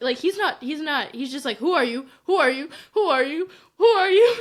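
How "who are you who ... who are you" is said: very loud, frantic, panicked, repeated. Retelling how Maul reacts when Vader shows up: imitating Maul panicking. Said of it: "just totally panicking".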